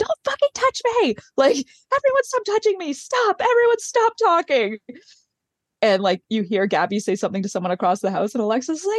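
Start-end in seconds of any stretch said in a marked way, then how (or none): 0.0-4.8 put-on, very high, hysterical crying scream. Retelling how Alexis became hysterical at everyone, imitating Alexis screaming. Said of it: "Crying, screaming, like being like".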